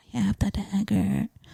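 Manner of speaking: secretive, soft, hushed whisper under the breath. Retelling how Rob answered about the dagger, retelling a whisper. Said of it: "he whispers".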